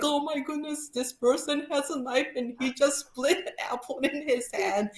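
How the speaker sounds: high, scared, tearful, frightened blubbering. Telling of a man splitting an apple with a pocket knife: retelling crying in fright. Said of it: "I started crying, going like".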